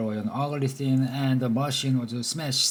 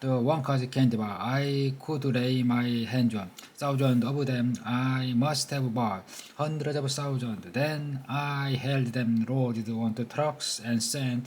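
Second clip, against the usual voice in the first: usual speaking voice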